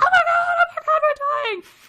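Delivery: frantic, very high, very loud, shrill panicked screaming. Telling a story, the speaker acts out two people yelling at each other. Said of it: "they're yelling at each other".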